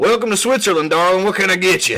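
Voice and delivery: put-on Kentucky accent, loud and high. Acting out a lady in Geneva greeting customers: Kentucky accent. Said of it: "she has, like, a Kentucky accent".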